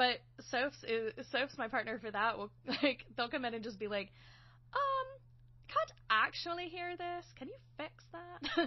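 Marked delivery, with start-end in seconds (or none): 5.7-8.7 bad put-on Irish accent, much higher, slower. Speaker imitates a sound-design partner asking for a fix, very bad Irish accent as Sophie. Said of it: "me doing a very bad Irish accent".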